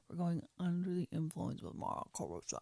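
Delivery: put-on flat, dull announcer voice, zero enthusiasm. Retelling how the guest was announced before: imitating a flat unexcited intro. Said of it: "that sounds so bad".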